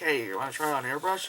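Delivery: ordinary delivery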